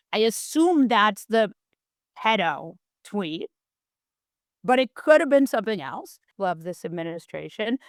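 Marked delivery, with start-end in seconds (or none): 6.3-7.7 softer voice, purely sarcastic. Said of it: "I mean that with all the disdain in the world, that's irony. Or is it sarcasm? It's sarcasm".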